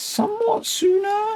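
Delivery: very high, really weird, squeaky voice. Explaining ways to connect the power up, in a really weird squeaky voice. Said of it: "he says in a really weird squeaky voice".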